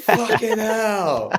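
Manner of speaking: high, slow, laughing curse.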